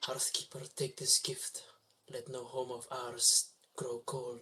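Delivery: soft, muttered, under-the-breath voice. Tossing kindling into the fire as an offering: muttered prayer. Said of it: "just mutter out a".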